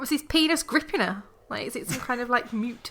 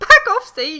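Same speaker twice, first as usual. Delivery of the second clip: very loud, shrill, hysterical yelling outburst; 8 semitones higher, 10 dB louder than usual. Showing a reader how a line should sound redone with hysteria: hysterical. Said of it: "It was more like".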